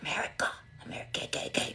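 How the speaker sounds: hushed, barely voiced whisper. Speaker worried TikTok is watching, saying it in a whisper. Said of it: "I gotta whisper it".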